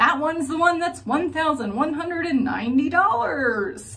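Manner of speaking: playful, joking tone. Going through four serums one by one, in a jovial, jesting way. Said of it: "saying it in like this jovial, jesting way".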